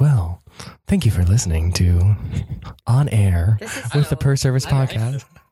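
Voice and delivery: acted radio announcer voice. Podcast host formally opening the show with a guest, in an NPR voice. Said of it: "default into my NPR voice".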